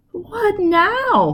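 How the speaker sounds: tiny, very high, desperate, pleading little voice. Reading a story aloud, a trapped mouse asks what next: desperate little voice. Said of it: "said Spinny in a desperate little voice".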